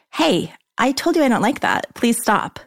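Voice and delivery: serious, no-joking firmness. Teaching someone what to say when he touches you: stern, firm, not joking. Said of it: "That's the tone. Not joking, stern, firm".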